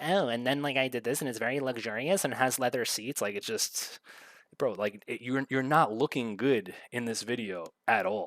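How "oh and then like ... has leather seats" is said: high-pitched, showy, flamboyant delivery. Mocking how the other speaker talks: mocking high-pitched flamboyant imitation. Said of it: "you talk like".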